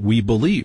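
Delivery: plain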